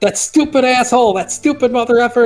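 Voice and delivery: put-on loud childlike voice. Voicing Sam buried in a crater, cursing very loudly in a kid-like voice. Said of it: "He's just cursing this".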